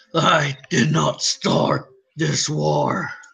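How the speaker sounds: put-on deep, rough, very slow, dragged words. Talking about movie trailers, doing a Caesar impression. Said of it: "That's my impression of Caesar".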